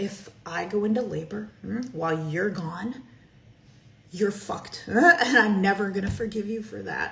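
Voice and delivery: playful, joking, spoken through a laugh. Suggesting a joking line about going into labor: joking, laughing delivery. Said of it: "see how I say it with a laugh?".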